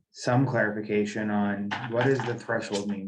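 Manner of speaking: normal talking voice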